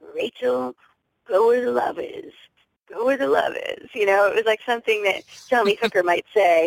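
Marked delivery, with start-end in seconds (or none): 0.2-3.9 high, crackly, creaky comic voice. Speaker quotes a man's everyday saying to her, in his funny crackly voice. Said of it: "in this funny, crackly voice that he has".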